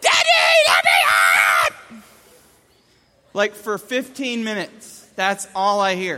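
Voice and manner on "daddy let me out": put-on toddler yelling. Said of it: "he's still yelling".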